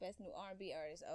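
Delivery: normal talking voice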